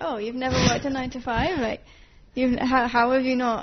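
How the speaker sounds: ordinary delivery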